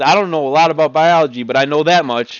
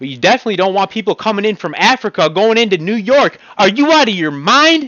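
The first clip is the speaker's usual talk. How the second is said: high, heated, loud yelling rant; 5 semitones higher than usual. Ranting to the audience: yelling. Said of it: "I'm sorry for yelling".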